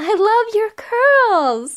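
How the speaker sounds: excited, drawn-out high voice. Reading a story aloud, the storyteller's line about the curls: said excitedly. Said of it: "I said excitedly".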